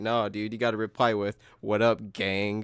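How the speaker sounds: ordinary delivery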